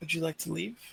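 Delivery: gentle half-whisper, barely audible. Voicing a character leaning into an owlbear's cage: very soft half-whisper. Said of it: "very softly whisper".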